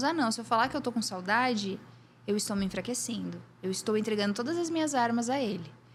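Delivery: ordinary delivery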